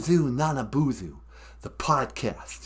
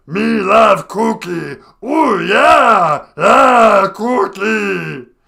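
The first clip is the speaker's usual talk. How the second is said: slow, rough roar with yeah stretched out; 7 semitones higher, 13 dB louder than usual. Describing the voices done, then showing one: Cookie Monster voice. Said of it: "Cookie Monster is really tough to do".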